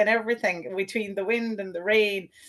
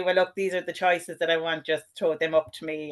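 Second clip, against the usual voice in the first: usual speaking voice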